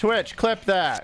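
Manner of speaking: very loud, high-pitched yell. Streamer repeats a voice command to clip the stream, yelling. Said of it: "Do I have to like yell it every time?".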